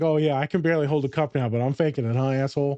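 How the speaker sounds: plain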